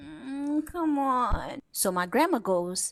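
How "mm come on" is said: put-on drowsy, clueless just-woken-up mumble. Reenacting dad, confused, resisting getting up: imitating dad just woken up. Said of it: "who has no idea what's happening".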